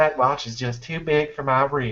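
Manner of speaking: fake, put-on Southern movie accent. Repeat the bit after telling your listeners which voice it was, in a put-on southern film voice. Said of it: "that was my like Southern film".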